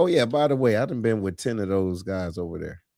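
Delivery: ordinary talk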